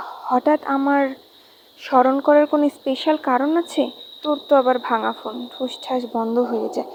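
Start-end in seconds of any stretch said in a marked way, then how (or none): none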